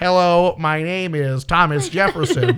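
synthesized robot computer speech voice. Joking about someone using one of those computer voices; robot computer voice. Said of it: "one of those robot computer voices".

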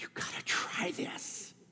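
hoarse, rasping, hushed whisper. Describing a woman who tastes something and urges others on, raspy voice. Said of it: "her voice gets raspy and says".

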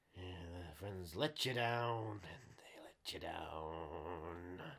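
low, soft, hushed, slow drawl with "down" dragged out. Quoting a classic film line in a Benicio del Toro voice. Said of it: "a classic Benicio Del Toro line".

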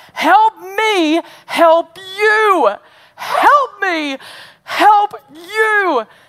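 fired-up, impassioned, high, loud, slow delivery.

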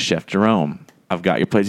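usual speaking voice

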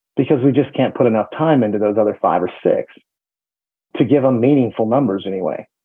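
normal talking voice

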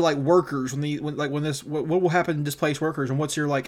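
normal talking voice

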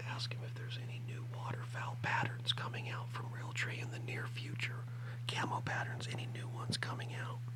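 hushed whisper. Passing along a last question for Tyler, whispering. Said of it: "I'm going to whisper this one".

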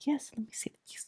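hushed, whispered, breathy murmur. Describing how front desk secretaries always talk, imitate one: front desk secretary voice. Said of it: "they always talk like".

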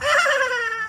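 very high, weird squealing laugh. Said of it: "the laugh is like".

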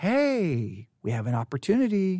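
slow, seductive, alluring tone, hey drawn out. Showing how a woman in a historical narrative may have spoken; seductive voice. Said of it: "how did she say it in a seductive way?".

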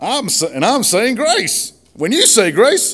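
put-on Southern accent. Quoting a movie character's dinner prayer: Ricky Bobby Southern accent. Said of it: "I'm gonna lose my accent".

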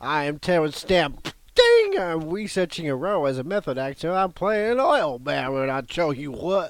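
loud, rooster-like crowing character voice. Playing Terence Stamp researching an oil baron role: rooster-like voice. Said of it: "Sounds like he's playing a rooster".

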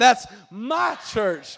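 MY stressed, slow and loud.

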